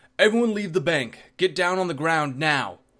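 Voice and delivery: very loud, high, commanding bellow. Narrator reads a character's command to the people in the bank: bellowing. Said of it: "Aegis bellowed".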